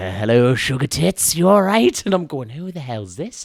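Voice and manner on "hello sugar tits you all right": leering, creepy, loud, slow sleazy drawl. Speaker imitates how Craig answers the phone, imitating Craig's sleazy voice. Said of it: "he picks up the phone like like a deviant sex pest".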